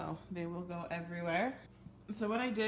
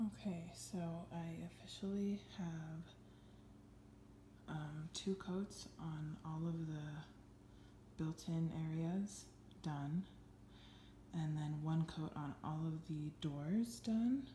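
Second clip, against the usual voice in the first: speaking softly, quieter; 9 dB quieter than usual. Giving an update at night while the kids sleep: talking quietly. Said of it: "I'm talking quietly".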